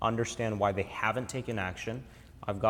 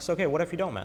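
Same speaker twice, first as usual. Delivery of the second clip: play-acted blunt, direct tone, pitched up; 7 semitones higher, 3 dB louder than usual. Recalling questioning salespeople upfront, acting out a blunt question. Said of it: "I'll ask it very upfront. I'm like".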